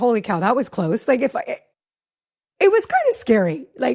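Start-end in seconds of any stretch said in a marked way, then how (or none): none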